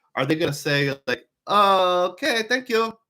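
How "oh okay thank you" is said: put-on Swedish accent, high, slow and drawn-out. Imagining the hotel front desk's reply to an Expedia Gold member: Swedish accent. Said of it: "that's my Swedish accent".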